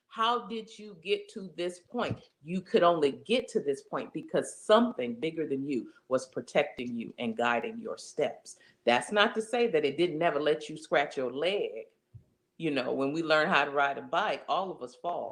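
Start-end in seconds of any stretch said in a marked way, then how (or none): none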